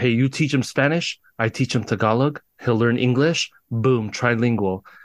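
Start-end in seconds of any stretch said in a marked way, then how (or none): none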